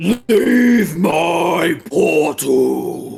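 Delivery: thundering very loud demon voice, "my" drawn out. Narrator voicing the creature inside the structure as the players arrive: deep booming voice. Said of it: "then a deep booming voice".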